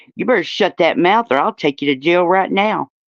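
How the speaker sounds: ordinary talk, nothing marked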